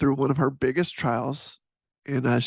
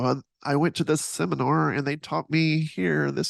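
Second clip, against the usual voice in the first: nerdy-sounding voice. Imitating a leader who learned from a seminar, nerdy voice. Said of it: "that was my nerdy voice".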